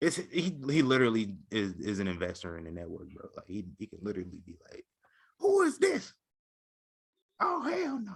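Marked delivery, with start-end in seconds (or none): 5.4-8.2 very high put-on voice, dragged out. Imagining how an investor in the network would react, doing a Steve Harvey impression. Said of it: "That's my Steve Harvey impersonation".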